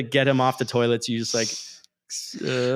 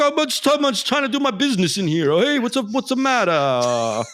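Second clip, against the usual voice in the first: very high, swooping pitch; 11 semitones higher, 4 dB louder than usual. Voicing a bugbear caught on the toilet: Yogi Bear voice. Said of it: "It's like Yogi Bear or something".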